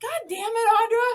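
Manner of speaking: shrill, high, loud yell through laughter. Retelling yelling at audra while laughing, retelling a laughing yell. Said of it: "yelling at Audra, but like laughing".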